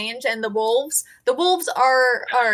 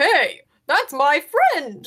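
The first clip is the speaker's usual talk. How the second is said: swooping bear character voice; 4 semitones higher than usual. The bear protests as wolves threaten his passed-out friend, bear voice. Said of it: "the bear is like".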